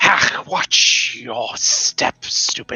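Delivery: put-on hissed, reptilian, young dragon voice.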